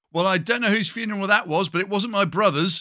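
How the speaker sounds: very loud, high-pitched, carrying voice. Retelling what an aunt said at a funeral's end, in a very loud voice. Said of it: "she said in a very loud voice".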